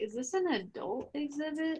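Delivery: very quiet, slow, hushed half-whisper. Half-whispering a question to another character while entering the exhibit: half-whispering. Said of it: "whisper to Geth".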